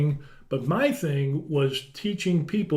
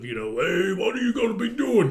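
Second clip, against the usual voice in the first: put-on gruff voice, pitched higher; 5 semitones higher than usual. Recapping a scene, doing Joey Stacks's reply in a rough, gruff voice. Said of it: "in this rough, gruff voice".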